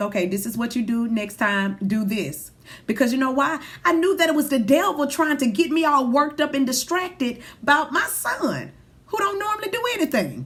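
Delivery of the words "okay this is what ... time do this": calm, even, composed low voice. A parent retells instructing their son after a neighbor called, retelling a calm voice. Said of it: "I just talked to him in a calm voice".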